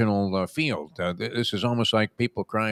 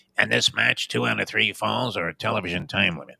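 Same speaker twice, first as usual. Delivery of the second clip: rough, creaky, raspy announcer voice. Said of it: "'Cause I only do one impression voice".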